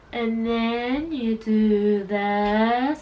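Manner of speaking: very slow, careful, concentrating delivery. Showing how they talk when explaining things in their videos: very slow speech. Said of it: "I talk so slow when I'm doing these videos, ... I'm like".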